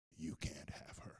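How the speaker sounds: low, deep guttural whisper. Speaker retells what she said after sitting straight up: deep guttural voice. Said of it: "in a deep guttural voice".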